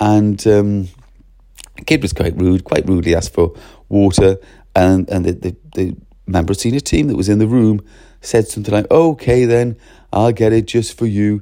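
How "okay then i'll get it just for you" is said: put-on jocular, jokey tone. Retelling what a senior staff member said to a rude kid: imitating a jocular, jokey tone. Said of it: "He was kind of jocular and jokey".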